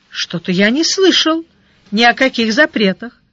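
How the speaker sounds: ordinary delivery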